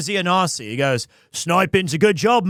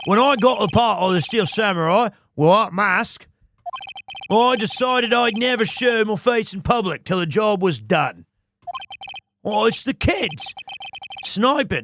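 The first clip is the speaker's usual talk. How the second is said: put-on accent wobbling between Australian and Scottish. Speaking as the actor who played the Steel Samurai, in a mixed Australian-Scottish accent. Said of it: "I don't know if I'm getting Australian or Scottish or all three mixed up".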